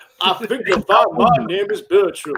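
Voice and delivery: slow, deliberate, measured controller voice. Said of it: "your voice of the Sir Topham Hatt".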